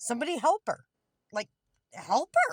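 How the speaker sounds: high, loud angry call.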